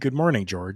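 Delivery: ordinary delivery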